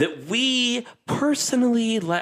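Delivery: high, slow put-on game show host voice. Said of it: "I don't know why I'm talking like this".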